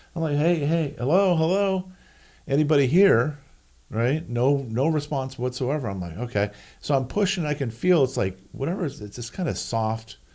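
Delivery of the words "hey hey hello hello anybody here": high, drawn-out yell, calling out. Telling how they pushed a door open and called inside, retelling a yell through a door. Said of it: "I'm yelling in the door".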